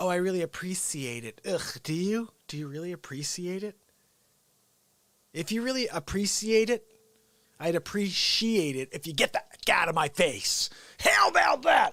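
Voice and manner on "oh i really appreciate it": derisive, mocking send-up delivery. Mocking how people say they appreciate something: mocking imitation of people saying appreciate. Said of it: "I hate when people do that".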